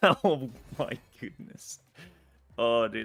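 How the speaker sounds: words broken up by laughter. Reacting to a fellow player's story about his card collection, laughing. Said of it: "I'm so sorry for laughing".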